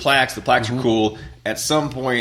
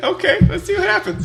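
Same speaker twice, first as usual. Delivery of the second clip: put-on wary dog voice, higher and louder; 4 dB louder than usual. Retelling the dog reacting to a reach for its nose: voicing Tucker the dog. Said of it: "And he was like".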